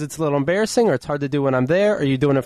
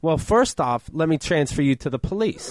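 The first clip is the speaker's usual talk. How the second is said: ordinary delivery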